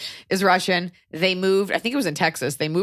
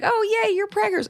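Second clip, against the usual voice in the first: very high-pitched, sugary sweet tone. Retelling what people say about the pregnancy: imitating sweet people. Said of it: "the amount of people who are so sweet".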